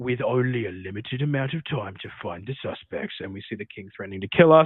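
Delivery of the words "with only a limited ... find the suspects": movie trailer announcer voice. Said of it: "movie trailer in a world where, like, voice of".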